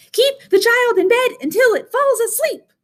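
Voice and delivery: squeaky monster voice, way up high. Narrating a story, the orange monster answers a question: squeaky Morgan monster voice. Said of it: "The orange monster bounced and squeaked".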